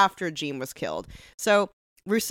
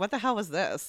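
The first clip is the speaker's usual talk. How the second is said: ordinary delivery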